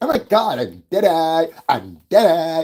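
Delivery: older woman's slow, drawn-out fake teen voice. Mocking a woman who acts eighteen on camera: imitating a woman faking youth. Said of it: "That's how the bitch talk".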